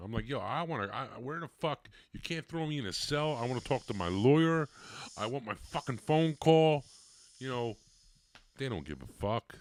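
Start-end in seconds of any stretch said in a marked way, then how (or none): 0.3-6.8 put-on, full-on, high-pitched hollering and screaming. Retelling being locked in a cell room: retelling own screaming. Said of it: "I'm screaming".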